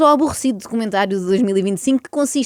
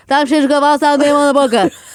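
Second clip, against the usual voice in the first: lazy, mumbling, lazy-lipped slurred voice; 5 semitones higher, 5 dB louder than usual. Imitating how Beto talks: Beto's lazy-lipped slurred speech. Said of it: "Beto que é Beto fala assim".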